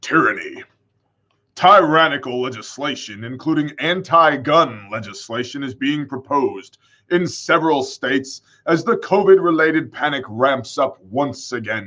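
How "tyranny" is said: put-on spooky, menacing, scary voice. Reading a word aloud again after suggesting it: put-on scary voice. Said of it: "Maybe we should use, like, a scary voice".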